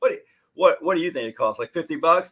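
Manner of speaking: mock, mildly sarcastic tone. Retelling asking a client what she thinks extensions cost: imitating own sarcastic tone. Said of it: "it was a little sarcastic".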